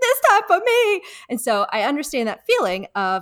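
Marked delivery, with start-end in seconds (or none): 0.0-1.0 scared, rattled, very high-pitched frightened delivery. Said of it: "And then she gets really scared".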